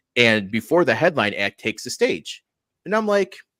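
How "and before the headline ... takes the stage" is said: plain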